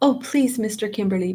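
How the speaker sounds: pleading, begging tone. Reading a story aloud, a girl pleading to keep the school: begging. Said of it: "begged Kit".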